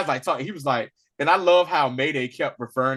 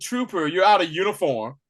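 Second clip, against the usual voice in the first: smug, superior put-on British accent; 5 semitones higher than usual. Retelling a scene where a superior addresses a trooper, mock-smug British accent. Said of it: "that smug British accent".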